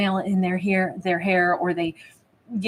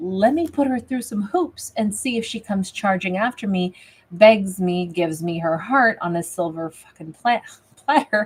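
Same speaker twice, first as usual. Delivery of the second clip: normal talking voice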